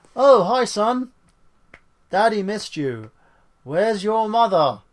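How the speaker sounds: stiff, lifeless, wooden reading, high and loud. Recapping a movie's reunion scene, quoting the hero greeting his son, mock wooden line reading. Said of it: "a very wooden, and I mean wooden".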